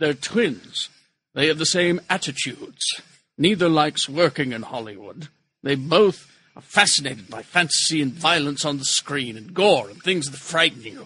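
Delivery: unhurried, weighty, slow and deliberate reading voice. Reading a news item aloud: Ian McKellen voice. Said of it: "I'm gonna try to read this like Ian McKellen".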